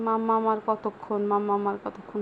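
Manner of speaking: ordinary talk, nothing marked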